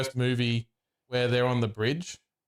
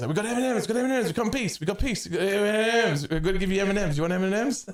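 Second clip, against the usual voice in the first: high yelling, repeated over and over; 8 semitones higher than usual. Speaker retells what he yelled at people approaching them, imitating someone yelling. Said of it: "and he just yells".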